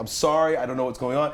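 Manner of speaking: normal talking voice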